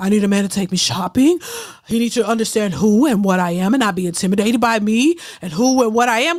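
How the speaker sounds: put-on breathless voice, struggling for air. Telling Pharaoh how she talks, imitating breathless talk. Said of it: "She talk like she can't breathe".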